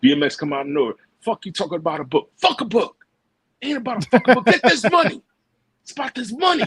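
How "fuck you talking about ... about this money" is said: high, energetic, dismissive outburst. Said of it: "you can hear [name]'s energy in that part".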